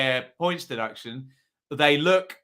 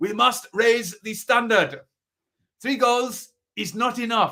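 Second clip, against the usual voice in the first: bad put-on German accent, pitched up; 8 semitones higher than usual. Joking about German football rules, bad German accent. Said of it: "that was the worst German accent you've ever heard".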